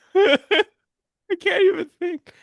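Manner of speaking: very high, loud, talking through laughter. Trying to answer a word puzzle, laughing while talking. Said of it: "I'm crying laughing".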